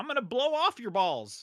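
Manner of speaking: sudden, blurted, high-pitched shout. Speaker describes a game's random one-liners, imitating Tina shouting. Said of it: "she just shouts like".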